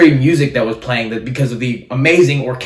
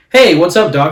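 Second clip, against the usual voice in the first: smooth, suave put-on billionaire voice; 5 semitones higher, 5 dB louder than usual. Retelling a scene where Bruce Wayne takes a phone call: smooth Bruce Wayne voice. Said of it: "talking in his smooth Bruce Wayne voice".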